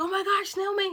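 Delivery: very loud, high-pitched screaming. Speaker recalls getting accepted and calling to their aunt, retelling own screaming. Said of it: "And I'm like screaming".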